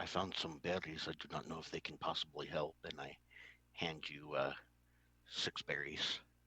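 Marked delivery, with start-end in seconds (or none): 0.0-2.8 very quiet, hushed half-whisper. Playing a character who offers berries to another: half-whispering quietly. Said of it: "very quietly, I just kinda whisper".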